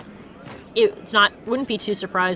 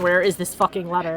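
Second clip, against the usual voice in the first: ordinary delivery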